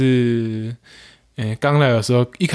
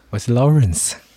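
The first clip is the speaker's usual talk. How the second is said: put-on old-time radio announcer voice. A guest introduces himself to the audience in an old radio announcer voice. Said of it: "就是老广播员的声音讲话吗".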